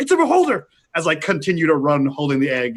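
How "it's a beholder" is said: very high, shrill yelled shout. Voicing a character who runs from the mine, warning others: shouting. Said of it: "so I would shout".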